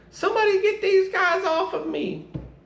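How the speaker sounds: whiny, very high-pitched crying voice. Retelling a story, mimicking a first lieutenant in a whiny high-pitched voice. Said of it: "he had a very distinct, whiny, high pitched voice".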